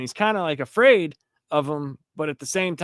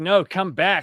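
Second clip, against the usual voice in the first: loud, put-on calling-out yell; 4 semitones higher than usual. Describing a comic panel where a character yells at birds: retelling a yell. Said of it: "He he's yelling at the birds".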